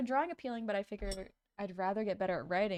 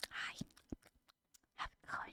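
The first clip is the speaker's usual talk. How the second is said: very soft whisper pressed to the mic. Complaining about asmr videos, imitating a close asmr whisper. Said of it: "whispering into the mic like so close".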